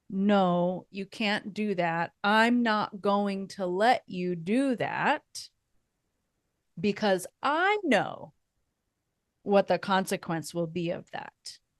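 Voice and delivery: ordinary talk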